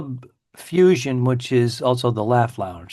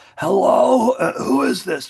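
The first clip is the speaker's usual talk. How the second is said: put-on hoarse old-man voice, very high; 11 semitones higher than usual. Playing along as someone answering the phone, in an old man voice. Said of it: "like an old man".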